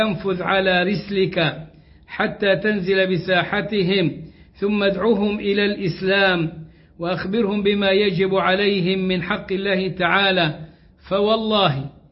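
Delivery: plain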